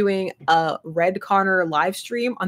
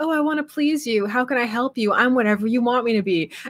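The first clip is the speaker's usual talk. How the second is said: mock placating, submissive, eager-to-please, people-pleasing delivery; 5 semitones higher than usual. Showing how she plays Connor in the game: placating Connor voice. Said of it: "my Connor is so, like, placating".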